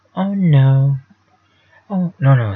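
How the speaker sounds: very drawn-out exclamation. Quoting a famous character's line: Family Guy character impression. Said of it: "He's a guy who says in the Family Guy".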